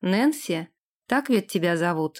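ordinary delivery

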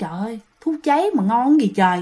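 ordinary talk

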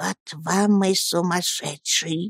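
grave, hushed, serious whisper. Narrator reads the grandmother's remark to those around her, whispered. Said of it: "бабушка шептала".

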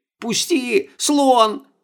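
pitiful, very high, hoarse, plaintive raspy voice. Crushed in a bodyguard's grip, a woman begs him to let go: plaintive rasp. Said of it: "жалобно просипела Стефания".

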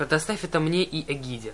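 ordinary delivery, nothing marked

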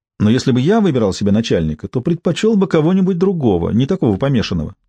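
plain

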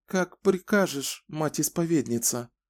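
trembling, shaky, quavering voice. The younger of two women answers the Mother Confessor, in a trembling voice. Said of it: "проговорила дрожащим голосом".

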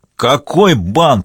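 shouted. Reading a story, voicing a character who bangs his fist on the table, shouted. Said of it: "крикнул Борис Алексеевич".

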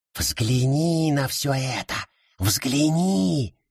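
sibilant, hissing voice. Narrator voices the forest speaking to the father, hissing. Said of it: "прошипел лес".

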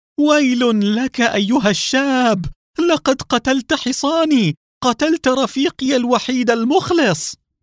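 very high anguished shout of pain and grief. A horseman whose horse was just brought down cries out to the young man: anguished grieving shout. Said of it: "وصاح بصوت مملوء بالألم والأسى".

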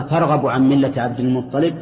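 ordinary delivery

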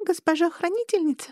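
small, thin, squeaky voice. A sad lynx-eared creature addresses the guardian lady, squeaky thin little voice. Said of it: "пропищал он тоненьким голоском".

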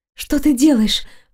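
barely audible whisper. Trembling all over, the woman whispers to the man, barely audible. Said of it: "прошептала еле слышно, дрожа всем телом".

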